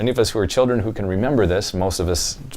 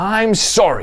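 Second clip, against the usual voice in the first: angry, grudging, resentful tone, much higher pitch; 11 semitones higher than usual. Showing how an apology said against one's will sounds, angry forced apology. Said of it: "they're doing this against their will and that they're angry".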